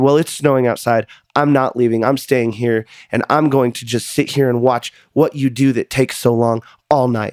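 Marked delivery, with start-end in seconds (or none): none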